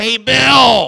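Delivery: very loud, creaky fake woman's voice, name stretched. Retelling a woman calling across the church during a sermon: bad imitation of a woman's voice. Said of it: "That's not a very good woman's voice".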